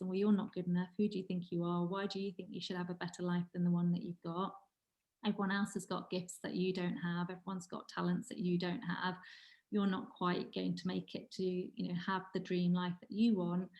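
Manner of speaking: normal talking voice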